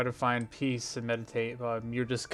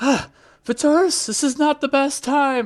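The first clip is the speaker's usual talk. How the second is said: very high, very loud, shrill, frantic screaming yell; 9 dB louder than usual. Game master voices Joyce picking up the player's call, Joyce frantically screaming. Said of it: "pick up like frantically screaming like".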